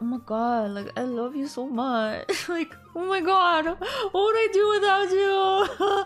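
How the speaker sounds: imitated emotional gushing, weepy. Retelling how she talks to Andy on Shark Week: imitating her own emotional gushing. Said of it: "so emotional".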